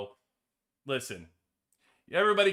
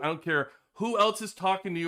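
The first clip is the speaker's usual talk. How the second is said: ordinary talk, nothing marked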